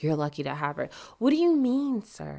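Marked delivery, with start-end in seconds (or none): 0.0-0.9 soft, hushed, confiding stage whisper. Imagining the boss coming up in a corner store: imitating a half-whisper. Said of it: "whispering to you".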